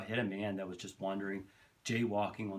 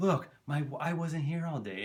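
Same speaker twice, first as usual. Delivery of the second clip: higher, raised, high-pitched voice; 7 semitones higher, 5 dB louder than usual. Retelling a man's answer about the problem next door, imitating a higher-pitched voice. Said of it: "He always had this kind of higher pitched voice".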